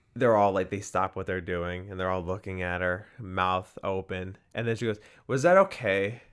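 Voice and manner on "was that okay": high, loud, snooty voice. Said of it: "Like, very, like, snooty almost".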